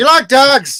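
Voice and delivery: put-on Irish accent, very high and very loud. In a chat about favorite movies, asking a question in an Irish accent. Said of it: "you literally just went with a, a, an Irish accent".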